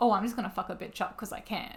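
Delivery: normal talking voice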